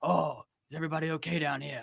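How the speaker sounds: groggy, sleepy voice of a just-woken dad. Retelling a show scene, imitating Boba Fett as a just-woken dad checking on kids. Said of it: "he comes down like a dad who just got woke up".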